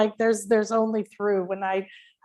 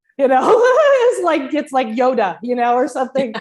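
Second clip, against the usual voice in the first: ordinary delivery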